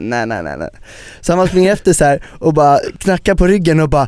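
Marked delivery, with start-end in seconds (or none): 0.0-0.7 mock chuckling, laughing, repeated brush-off. Retelling how the waiter laughed in his face while refusing: imitating someone laughing. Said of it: "skrattade han i ansiktet och bara".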